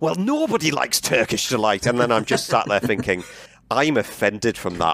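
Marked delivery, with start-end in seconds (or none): 0.0-1.9 blurted, swooping bellow, kept small and mild. Recounting a film scene, speaker voices a girl's reply, retelling a bellow. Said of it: "she just bellows out".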